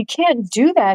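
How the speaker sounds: high cry with the voice cracking. Narrator voices a man crying out as the mask's meaning sinks in, high, cracked cry. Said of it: "he cried out in a high, cracked voice".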